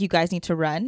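ordinary delivery

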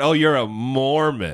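very slow, disdainful sneer, one word drawn out. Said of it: "They put a little stank on the word when they say it".

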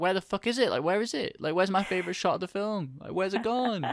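very high-pitched, outraged, indignant shouting. Recalling watching a film with a favorite shot missing, retelling shouting at a screen. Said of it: "I was like shouting at my screen".

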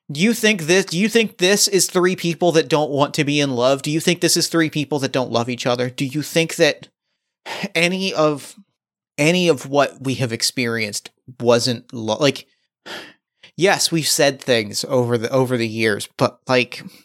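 ordinary talk, nothing marked

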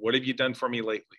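ordinary talk, nothing marked

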